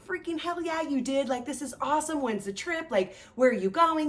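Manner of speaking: high, excited cheering. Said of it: "this celebration".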